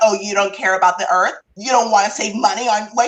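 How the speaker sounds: very angry indignant outburst. Retelling a man getting angry at the speaker: mock-angry retelling. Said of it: "he's getting like very angry".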